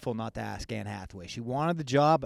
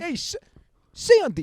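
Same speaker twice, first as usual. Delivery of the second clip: very high, loud, raised calling voice; 6 dB louder than usual. Doing an impression for friends, saying a movie line: John Travolta impression. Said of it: "my impression".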